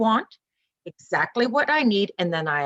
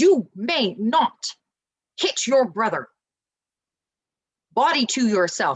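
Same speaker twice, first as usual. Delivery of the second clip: firm, strong, stern, no-nonsense voice. A parent demonstrates disciplining a two-year-old, in a strong, firm voice. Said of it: "in a strong, firm voice".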